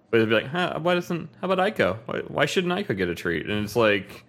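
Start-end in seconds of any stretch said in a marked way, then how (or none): 0.4-3.4 pitched-up voice like a talking cat. Recalling how the late cat was voiced, begging for a treat: voicing the cat Aiko. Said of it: "I used to do that with our".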